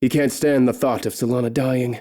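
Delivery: ordinary delivery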